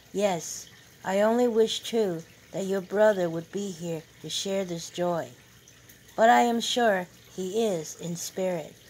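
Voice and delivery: ordinary talk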